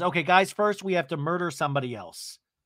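normal talking voice

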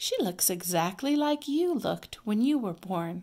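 plain

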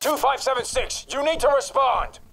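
very high-pitched, shrill shout. A voice directing D-Class 2576 demands a response, yelling. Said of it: "what are you yelling at me for?".

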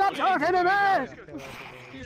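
very slow yelling, every word dragged out. Imitating the captain's yell that others find funny: imitating the captain yelling. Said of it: "When the captain yells".

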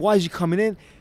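mock-defensive outburst. Retelling how a management company reacted to him, mock-defensive. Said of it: "the management company got all defensive".

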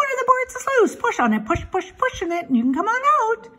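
very high, rapid, rattled-off goose chatter voice. Reading a story, the narrator voices the goose, talking rather fast. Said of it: "who talked rather fast".

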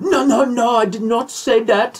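bad put-on British accent. Retelling a debate line with a put-on british accent: bad british accent. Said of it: "My British".

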